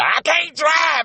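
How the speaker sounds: distraught high-pitched outburst. Retelling what she did after he told her to drive home, retelling a scream. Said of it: "And she just screams".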